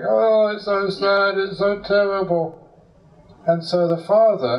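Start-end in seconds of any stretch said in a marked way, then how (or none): 0.1-2.6 high, drawn-out weeping through the words. Retelling how the hired actor joined the grieving father: acting out crying. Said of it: "this actor was also crying".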